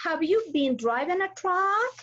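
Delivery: questioning rising pitch on the word "truck". Lesson on intonation in questions: rising intonation on truck. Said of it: "The racing intonation".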